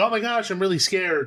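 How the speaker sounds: high-pitched, goofy, bumbling, frightened voice. Asking whether the other guide was goofy, imitating that guide: imitating a goofy scared guide. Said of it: "was your guy goofy?".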